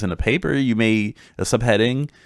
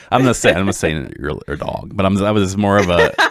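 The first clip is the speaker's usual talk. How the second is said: usual speaking voice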